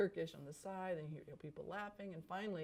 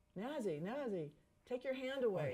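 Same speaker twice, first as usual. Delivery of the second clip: put-on loud booming yell, higher; 6 semitones higher than usual. Retelling his father shouting at someone whose hand covered the camera, booming shout. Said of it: "he's in a very loud, booming voice".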